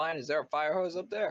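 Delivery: high, loud yelling. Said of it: "Why are you yelling?".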